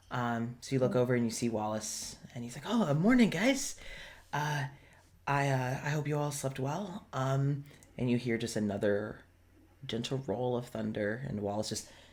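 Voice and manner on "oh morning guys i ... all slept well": tense, uneasy, on-edge, halting voice. Voicing Wallace behind the counter greeting the group: tense. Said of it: "he seems tense".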